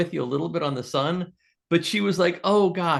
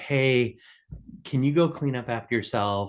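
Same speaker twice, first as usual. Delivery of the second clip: kind, patient, gentle, calm motherly voice; 5 semitones lower than usual. Speaker acts out how a mom asks her son to clean up, in a put-on motherly voice. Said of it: "Hopefully, in a mom kind of like a".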